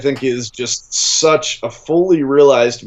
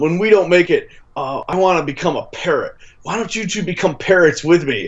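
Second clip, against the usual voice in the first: put-on speech impediment voice, higher pitch; 4 semitones higher than usual. Retelling a movie scene, doing John C. Reilly talking with a speech impediment. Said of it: "talking with a speech impediment".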